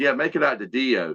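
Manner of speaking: ordinary talk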